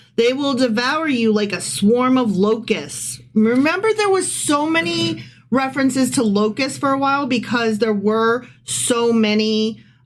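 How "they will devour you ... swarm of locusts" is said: ordinary delivery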